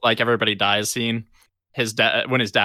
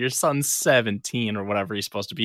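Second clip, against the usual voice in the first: ordinary talk, nothing marked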